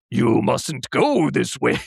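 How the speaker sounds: slow, rough, grinding, creaky stone-guardian voice. Retelling a movie scene as a talking stone face: imitating a stone face. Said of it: "snaps back to him being like".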